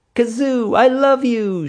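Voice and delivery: very high, joyful, gleeful crowing cry. A three-year-old hugging the costumed character's leg, crowing. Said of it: "she crowed".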